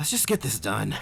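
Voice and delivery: ordinary delivery, nothing marked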